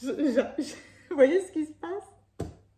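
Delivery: high, tearful, choked up, struggling to get words out. Speaking to listeners about heaven on earth, suddenly choked up with tears. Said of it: "J'ai les larmes aux yeux".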